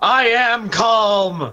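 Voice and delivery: high, agitated, worked-up voice with "calm" drawn out. Told by another character to calm down, an agitated character answers, yelling angrily. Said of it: "You're yelling".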